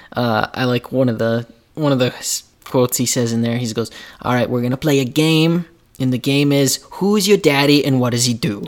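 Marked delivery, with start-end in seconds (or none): 4.2-8.7 put-on Belgian action-star accent. Quoting a movie line, accidentally sounding like Jean-Claude Van Damme. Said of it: "Why do you sound like Jean-Claude Van Damme right there?".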